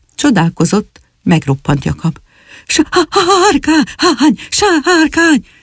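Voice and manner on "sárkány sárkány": out of breath, panting, much higher. Jakab raises the alarm again to the others, panting. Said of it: "Zihált tenyérbe mászó Jakab".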